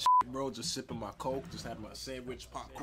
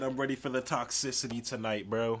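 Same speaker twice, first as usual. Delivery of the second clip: ordinary delivery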